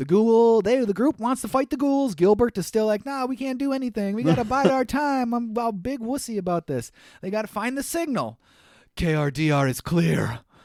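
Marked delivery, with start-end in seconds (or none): 9.0-10.4 put-on masculine voice, much slower. Recapping a show's plot, the speaker says Holly's line in Holly's masculine, husky voice. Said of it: "She says it in such a masculine, husky voice".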